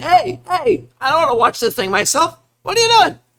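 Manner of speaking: very high, shrill, swooping yell. Narrating a game scene, voicing the little gnome yelling. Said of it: "the little gnome was like yelling".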